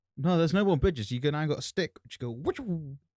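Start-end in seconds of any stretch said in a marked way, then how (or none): 2.3-3.0 high-pitched silly cow impression, mooed out. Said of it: "That was my impression of a cow".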